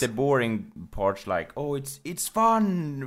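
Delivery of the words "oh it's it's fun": goofy put-on voice, very slow, stretched out. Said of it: "in a funny voice or something".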